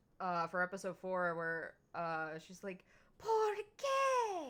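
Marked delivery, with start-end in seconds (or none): 3.2-4.5 very high, swooping, sing-song, "qué" stretched. Retelling a blooper line said in Philo's voice. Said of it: "I was saying that in her voice".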